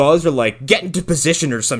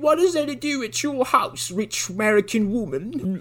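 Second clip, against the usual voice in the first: awful, pitched-up fake British accent; 9 semitones higher, 5 dB quieter than usual. Retelling a dubbed kid in a film asking a rich american woman, terrible british accent. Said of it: "the worst British accents I've ever heard".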